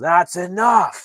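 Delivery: full-throated, shrill, booming shout, very high and very loud. Recounting a story, the speaker acts out a character's line: retelling a yell. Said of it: "he just yells".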